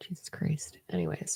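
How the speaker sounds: very soft, breathy, exasperated whisper.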